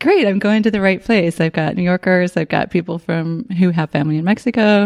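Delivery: ordinary delivery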